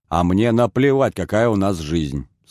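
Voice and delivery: plain reading voice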